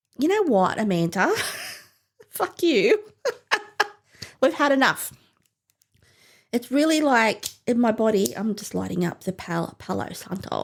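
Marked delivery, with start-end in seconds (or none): 0.2-5.1 put-on high, swooping voice with an odd accent. Describing feeling awful after three cans, voicing her own body. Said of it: "my body's like".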